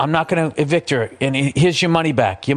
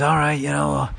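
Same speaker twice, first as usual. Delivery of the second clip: raspy put-on voice. Retelling a film scene, imitating Vito Corleone: raspy Marlon Brando voice. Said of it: "the Marlon Brando, like, raspy voice thing".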